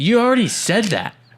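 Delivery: acted rude, snide voice. Retelling a movie scene where a character snaps at a friend: imitating a rude retort. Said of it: "And then very rudely".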